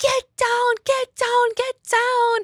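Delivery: crowd of voices yelling together.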